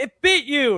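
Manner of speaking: put-on very high-pitched, very loud, shrieking childlike scream. Retelling how kids reacted to a snake bite: imitating kids screaming. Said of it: "just screaming".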